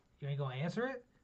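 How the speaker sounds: ordinary talk, nothing marked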